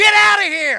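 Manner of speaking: mock furious yell, very loud and high. Acting out Jesus driving people from the temple: acting out an angry shout. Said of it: "he is not calm about this".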